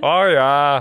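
bad put-on Jamaican accent that sounds Irish. Asked by the other host for a Jamaican accent, attempting a failed Jamaican accent. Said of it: "That's Irish".

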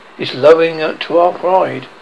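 ordinary delivery

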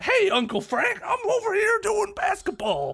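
very high, exaggerated caricature voice. Joking about a Fresh Prince of Bel-Air clip: Will Smith impression. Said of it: "That was my impression of a Will Smith".

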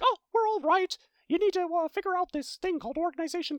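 very high, squeaky cartoon mouse voice. Summarizing a game story, quoting what King Mickey tells the others, King Mickey impression. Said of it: "You have a good Mickey impersonation".

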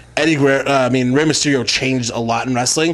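ordinary talk

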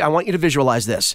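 ordinary talk

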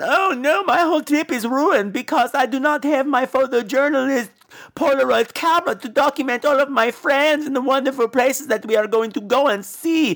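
play-acted, high, whiny, put-upon complaining tone. Mocking a movie character's complaint about her lost camera: imitating a whiny complaint. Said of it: "why are you talking like that?".

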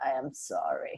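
low, soft, creepy voice.

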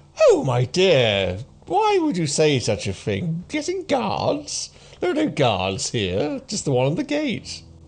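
lady character voice. Voicing the lady as she answers talk of guards: voicing the lady. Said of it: "she's like".

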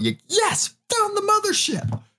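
put-on very high, sing-song, slow, swooping, drawn-out yell. Retelling finding where the roots and bulbs come from: imitating own past yell. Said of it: "I yelled out".

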